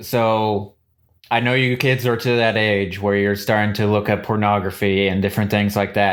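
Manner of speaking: usual speaking voice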